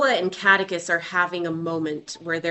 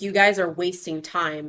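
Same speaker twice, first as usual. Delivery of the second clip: plain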